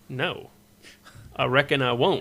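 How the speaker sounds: slow, drawled American cowboy talk. Retelling his reply to an annoyed player, talking like an american cowboy. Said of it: "I was talking like American Cowboy".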